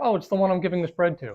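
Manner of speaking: normal talking voice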